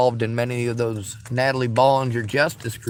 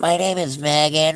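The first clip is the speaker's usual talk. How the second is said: mock falsetto voice, higher; 4 semitones higher than usual. Imitating a restricted caller who disguises their voice: imitating a caller's falsetto voice. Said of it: "or try to do a falsetto voice".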